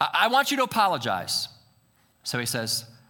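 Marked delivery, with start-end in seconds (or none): 0.0-1.5 acted sudden heated outburst, high and loud. Telling a story about a couple's tense argument, retelling her heated blurt. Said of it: "in the heat of the moment, she blurts out".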